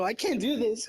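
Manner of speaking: frightened, overwhelmed, panicky voice. Playing a hard opponent on stream, scared and panicking. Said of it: "I'm actually scared, bro".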